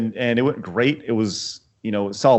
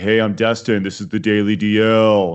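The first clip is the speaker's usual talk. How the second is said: monotone, lifeless, uninspired, flat delivery; 2 semitones lower than usual. Retelling how he introduced his show, imitating Destin's flat uninspired voice. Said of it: "really flat, like, uninspired voice".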